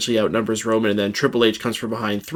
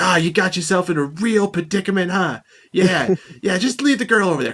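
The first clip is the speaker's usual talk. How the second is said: mock goading, heckling shout, high and taunting; 9 semitones higher than usual. Retelling a wrestler yelling from off camera: imitating Bubba Ray Dudley yelling. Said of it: "the things he starts yelling at him".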